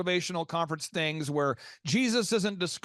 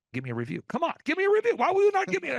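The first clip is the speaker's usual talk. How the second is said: mock very high, pushy tone, swooping and rising; 10 semitones higher, 4 dB louder than usual. Retelling a client phoning people for reviews: imitating a shameless pushy caller. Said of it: "shamelessly calling through his phone and just lighting people up going".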